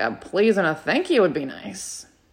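soft grumbling mutter under the breath. Retelling being barked at while golfing: retelling muttering under breath. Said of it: "I said under my breath".

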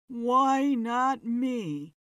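words groaned and moaned out. Reading a character's line amid a startled audience, moaning. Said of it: "Kerr moaned".

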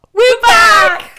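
very high, very loud, shrill screechy shout. Hosts back after a two-week break announce their return with a screechy shout. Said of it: "Sorry if that's screechy".

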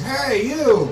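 loud, high-pitched calling voice.

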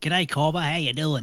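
put-on Australian accent. Greeting the others after being introduced as from Down Under: put-on Australian accent. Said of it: "now you're just acting".

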